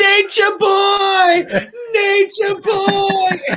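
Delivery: mock very high yell, "boy" stretched long. Retelling a wrestling match hold: imitating Sting yelling. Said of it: "and he's yelling".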